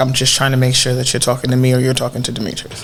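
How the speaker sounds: very low, deep voice, tone sunk way down. Retelling a conversation, quoting what a man said to the speaker: very low tone. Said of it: "Real, real low, low in tone".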